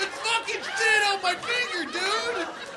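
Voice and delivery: shocked, loud yelling.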